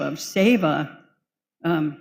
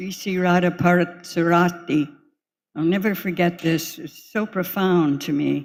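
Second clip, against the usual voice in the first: normal talking voice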